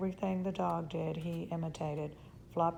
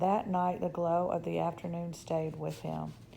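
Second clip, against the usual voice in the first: usual speaking voice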